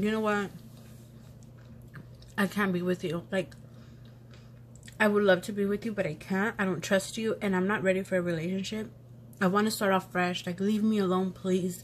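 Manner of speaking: ordinary delivery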